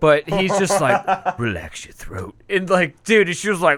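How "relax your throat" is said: breathy, breathed-out whisper. Retelling a story about an actor, doing a Liam Neeson impression. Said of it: "I can't do a Liam Neeson fucking impression".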